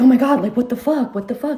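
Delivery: put-on frantic disbelief, panicked, totally losing it. Retelling a shocking moment with a partner: retelling freaking out. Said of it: "I start freaking out".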